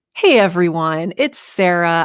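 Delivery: warm, open, friendly, loving tone. Showing how she wants to greet everyone: warm and open. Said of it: "I want to be very warm and open and loving. Like".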